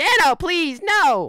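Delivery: shrill, blaring, very high, very loud character voice. Asked to say a requested line, the speaker does the Riggy voice. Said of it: "in the Riggy voice".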